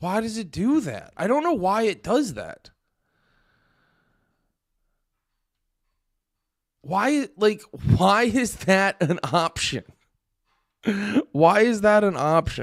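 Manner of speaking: shrill, furious rant, pitched way up. Fed up with a YouTube sign-out option, the speaker rants: angry. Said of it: "I'm so fucking mad right now".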